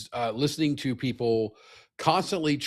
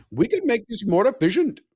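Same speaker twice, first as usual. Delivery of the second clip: very high, loud, put-on Indian accent; 10 semitones higher, 6 dB louder than usual. Speaker acts out a hypothetical person's line in a put-on Indian accent. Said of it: "I gotta do my Indian voice".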